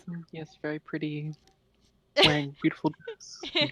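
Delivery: muttering under breath. Saying a remark quietly in character: muttering under breath. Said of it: "under my breath".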